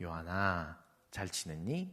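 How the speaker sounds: very hushed, low, soft and tender voice. Explaining how older teachers' ellipses read in messages, in a soft, gentle tone. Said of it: "약간 나긋나긋한 말투".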